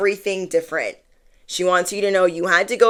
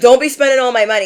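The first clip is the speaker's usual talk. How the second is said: mock yelling, higher and louder; 5 semitones higher, 6 dB louder than usual. Retelling a husband in a reel calling to his wife's car: imitating a husband yelling. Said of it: "yelling across to her car".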